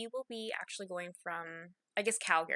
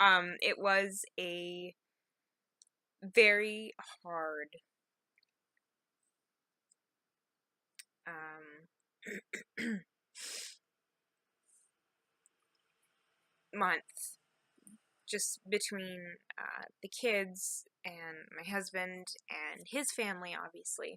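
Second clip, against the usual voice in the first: holding back tears while speaking. Telling how hard the month was after a death in the family, trying not to cry. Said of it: "I'm trying not to cry".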